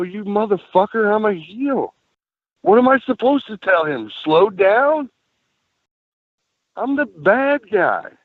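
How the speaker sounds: mock, high, drawn-out shouted yell. A wrestler recounts his reply over the referee complaint, retelling his own yell. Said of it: "And I'm yelling".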